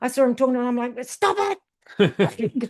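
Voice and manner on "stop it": high yell, carrying. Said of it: "Yelling it down the course".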